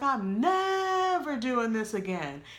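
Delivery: heavy stress on the word never. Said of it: "with the emphasis on never".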